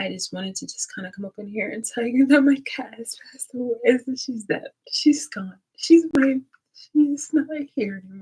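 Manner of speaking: weeping, tearful, crying through the words. Telling viewers that a pet cat has passed away, crying while talking. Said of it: "crying in front of you guys".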